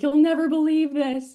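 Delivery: high, play-acted screaming. Retelling calling the director with big news, imitating own past screaming.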